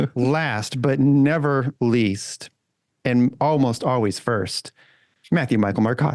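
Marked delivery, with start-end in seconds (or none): 5.3-6.2 full name rattled off fast as one flowing word. Introducing the last guest, the host says the full name run together fast. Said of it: "I need to say it faster".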